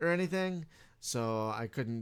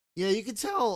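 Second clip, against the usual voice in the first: voice briefly breaking, cracking up high; 6 semitones higher than usual. In a conversation with a game developer, voice cracking. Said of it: "my voice broke there for a second".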